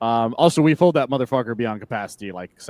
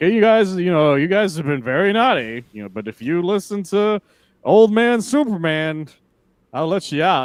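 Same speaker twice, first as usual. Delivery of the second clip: put-on condescending voice, much higher, louder, slower; 7 semitones higher, 3 dB louder than usual. Retelling a comic scene, voicing a Superman hologram talking to them, mock-condescending. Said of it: "condescendingly kind of talking to them".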